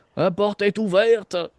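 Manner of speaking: put-on high, slow German-accented voice. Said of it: "t'entends une voix comme allemande".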